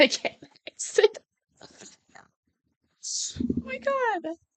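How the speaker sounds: crying with laughter. Failing to exit a program despite trying everything: crying with laughter. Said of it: "I'm still crying".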